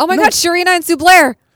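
very high excited yelp. In a lively conversation, blurting out a sudden realization with excited yelling. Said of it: "Sorry for yelling".

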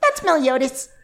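very high-pitched character voice. Explaining how they get a character's voice, then demonstrating: Meliodas voice. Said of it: "to get Meliodas's voice, I have to raise my eyebrows".

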